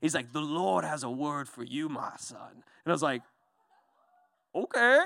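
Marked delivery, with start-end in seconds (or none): 0.3-2.5 soft, slow, deliberate preacher cadence. Retelling a man who suddenly speaks to him in a preacher voice. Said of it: "this like preacher voice on all of a sudden".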